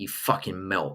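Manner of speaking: put-on low, quiet British accent. Speaker shows how to call someone a melt, in a British accent. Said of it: "You've got to say it in a British accent though".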